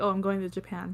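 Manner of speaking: ordinary talk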